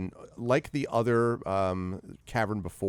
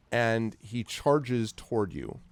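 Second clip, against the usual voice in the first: ordinary talk, nothing marked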